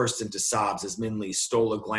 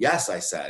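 ordinary delivery, nothing marked

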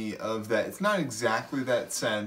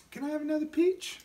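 very high, sweet little voice. Retelling what Kate asked after dinner, in Kate's sweet little voice. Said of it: "Kate said in her sweet little voice".

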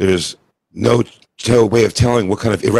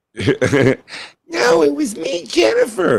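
very high, swooping, fake put-on girl voice. Retelling a man answering the cop, girl voice. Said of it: "talking in a girl voice".

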